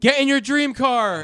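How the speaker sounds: very high, loud yelled call. Retelling what was yelled at a slow runner during a game: retelling own yell. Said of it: "and I just yell".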